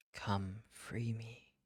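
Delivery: hushed whispered voice. Game master voices an unseen whisper calling to the players on watch: whisper. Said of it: "You hear these whispers".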